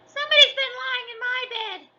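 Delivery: very high-pitched, loud squeak. Narrator reading Goldilocks aloud, voicing Baby Bear's squeaky voice. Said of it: "squeaked the baby bear".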